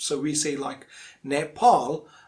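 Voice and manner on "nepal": nepal mispronounced with an r sound. Showing learners the common mistake: wrong R-sound pronunciation of Nepal. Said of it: "we use R sound in the second syllable".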